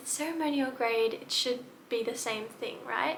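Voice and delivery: ordinary delivery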